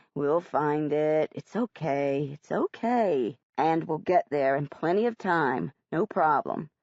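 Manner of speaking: very low, switched-on nice soothing voice. Lost at the school before the play, Dad switches fast to his nice voice. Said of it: "Dad switches to his nice voice fast".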